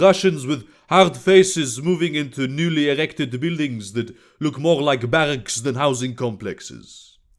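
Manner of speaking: plain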